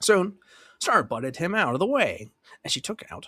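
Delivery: plain reading voice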